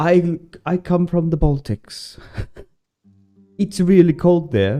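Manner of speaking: put-on Swedish accent. Speaker quoting a Latvian guy they once talked to, in a put-on Swedish accent. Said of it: "this is a Swedish accent that I'm trying to do".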